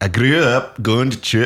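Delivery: high put-on Scottish accent, done for show. Asked by the other speaker to say it in the accent first: Scottish accent. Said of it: "I would do this in a Scottish accent".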